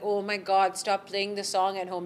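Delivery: normal talking voice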